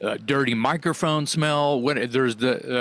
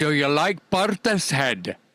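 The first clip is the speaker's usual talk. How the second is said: put-on Scottish accent; 3 semitones higher than usual. Retelling how someone asked him a question, in a Scottish accent. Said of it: "Scottish accent".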